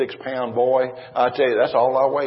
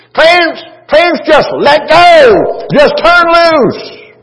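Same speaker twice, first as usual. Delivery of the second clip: very high, loud, very slow, shrill, drawn-out woman's voice; 15 dB louder than usual. A man retells what a woman said as she laid hands on him, imitating her shrill voice. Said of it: "Only her voice was a little more shrill".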